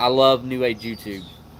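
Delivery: sarcastic, ironic tone meaning the opposite. Speaker making a remark, then pointing out it was sarcasm: sarcastic. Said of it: "That's me being sarcastic".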